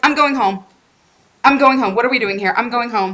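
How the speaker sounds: acted-out, annoyed, pissed-off, bratty rant. Retelling a racing driver's radio message after a crash: imitating a pissed-off Sebastian Vettel. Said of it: "he's just pissed off, and he's just like".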